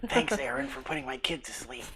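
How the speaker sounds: whispered voice. Thanking a player for getting the baby to sleep, whispering. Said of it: "I'm gonna whisper 'cause the baby fell asleep".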